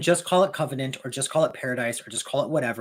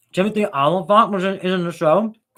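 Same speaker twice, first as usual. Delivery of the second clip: raised, higher talk through mouthful of food; 6 semitones higher, 7 dB louder than usual. Talking about a show's cast, talking with mouth full. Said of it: "I'm talking with my mouth full".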